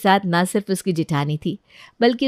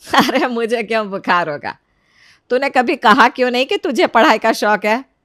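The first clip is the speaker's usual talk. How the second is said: ordinary delivery, nothing marked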